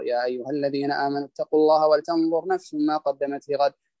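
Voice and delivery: plain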